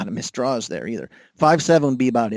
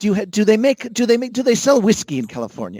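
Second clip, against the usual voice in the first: put-on thick, heavy Irish accent, higher pitch; 8 semitones higher than usual. Imitating how someone might question him: heavy Irish accent. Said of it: "I'm getting a heavy Irish accent now".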